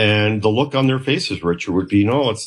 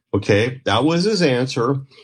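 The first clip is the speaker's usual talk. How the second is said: ordinary delivery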